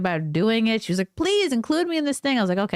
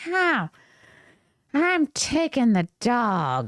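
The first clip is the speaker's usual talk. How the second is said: very slow, stretched drawl with pinched, tight throat. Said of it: "close up your neck a little bit and like".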